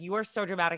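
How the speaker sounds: normal talking voice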